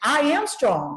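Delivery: firm, convinced delivery with full conviction. Showing students how to say an affirmation, the speaker says it with conviction. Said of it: "I want you to say it with conviction".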